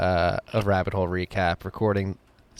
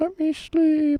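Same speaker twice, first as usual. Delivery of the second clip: very high, drowsy, tired owl voice. Podcast host doing a quick bit during an ad read, tired owl impression. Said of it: "my impression of a tired owl".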